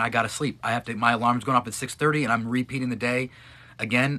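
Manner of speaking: ordinary delivery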